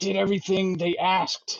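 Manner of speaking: furious snarling. Voicing a captive who is released from a spell: snarling and angry. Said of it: "he's just snarling and pissed".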